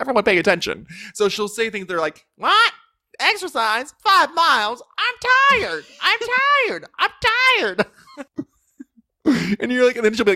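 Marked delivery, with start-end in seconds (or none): 2.4-7.8 very high-pitched, slow, goofy funny voice. Imitating a woman telling her stand-up jokes, imitating her weird funny voice. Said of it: "she'll tell jokes in her weird funny voice".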